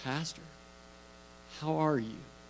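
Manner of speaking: very calm, soft-spoken voice. A pastor retells a phone call from Jim: quoting Jim's calm, soft voice. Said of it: "in his very calm, soft voice".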